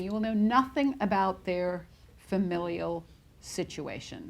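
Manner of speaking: ordinary talk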